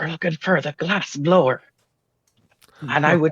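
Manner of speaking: hushed conspiratorial tone. Player telling the group what they are looking for so no one hears: lowered conspiratorial voice. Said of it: "and I lower my voice so no one, you know, conspiratorially".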